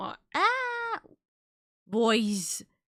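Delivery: very slow, cracking, failing voice. Talking while streaming and about to start work: voice giving out. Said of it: "I can hear my voice giving out".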